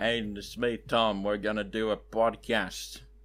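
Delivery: put-on Australian accent. Pretending to be Tom for the rest of the podcast: impression of Tom. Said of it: "gonna be Tom for the rest of the podcast".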